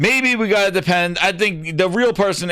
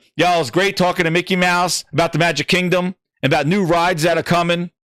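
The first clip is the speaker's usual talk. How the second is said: normal talking voice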